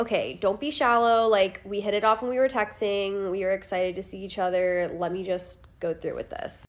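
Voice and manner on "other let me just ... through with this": ordinary talk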